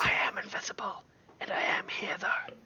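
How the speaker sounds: very soft, breathy whisper. A game master voices an invisible dragon lady between two players, dragon lady whispering. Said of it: "as the dragon lady whispers it".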